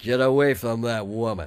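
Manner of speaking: put-on american cowboy accent. Retelling a priest's warning after being told to use John Wayne accent. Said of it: "that's what he sounded like".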